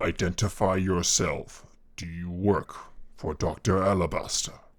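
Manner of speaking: very low, deep character voice. A voice the players hear questions them about doctor alabaster, in a very deep voice. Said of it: "a very deep voice".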